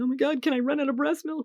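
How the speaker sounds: mock crying, pleading voice. Retelling a call to a sister about breast milk: imitating own past crying. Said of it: "I called my sister crying".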